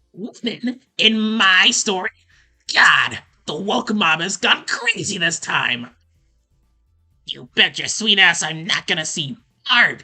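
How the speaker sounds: very loud, bellowing cartoon villain rant. Showing live what a character sounds like in their head: Caliborn impression. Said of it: "But I try to sound like a Skeletor".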